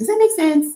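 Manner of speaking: put-on loud, high French accent. Quoting a choreography teacher explaining his moves: Giannis Amars's French accent. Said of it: "in his French accent".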